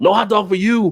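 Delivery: firm, flat, high-pitched voice. Joking about Chicago hot dog vendors like the Soup Nazi: Soup Nazi voice. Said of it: "like the soup Nazi".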